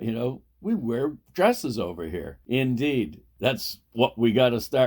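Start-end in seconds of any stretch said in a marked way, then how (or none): 0.6-2.4 acted, very proud, sing-song delivery. Retelling what an acquaintance in Ireland said: imitating Carolyn's proud tone. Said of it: "she said it with such pride".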